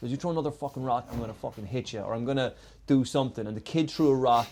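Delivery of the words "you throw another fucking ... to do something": play-acted, hot-tempered, heated, angry voice. Retelling a neighbor threatening a kid throwing rocks: imitating a heated threat. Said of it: "in this one heated moment".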